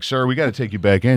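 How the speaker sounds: ordinary delivery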